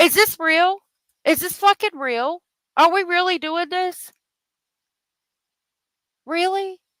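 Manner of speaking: high, agitated, upset angry outburst of disbelief. Reacting in disbelief, then apologizing: upset angry outburst. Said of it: "Sorry. Let me calm down".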